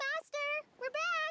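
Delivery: high, loud hollering shout. Calling out to the master on arriving back, shouting. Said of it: "You don't have to shout".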